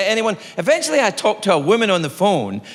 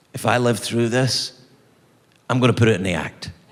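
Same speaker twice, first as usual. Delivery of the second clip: low, inner-voice tone. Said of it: "this voice, it came into my head".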